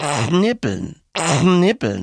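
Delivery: knibbeln pronounced with Saxon dialect. Explaining how a word sounds in dialect, say it in a Saxon accent. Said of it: "wenn man's richtig sächsisch nochmal ausspricht".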